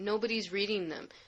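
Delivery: ordinary delivery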